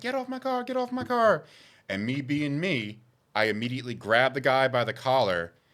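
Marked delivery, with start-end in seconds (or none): 0.0-1.4 play-acted, very high screaming. Telling how a man backed into two girls' car: imitating girls screaming. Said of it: "they start screaming like".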